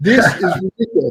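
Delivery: put-on, exasperated, frustrated outburst. Retelling getting desperate while searching, throwing up hands: retelling own exasperated outburst. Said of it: "throwing up my hands and go".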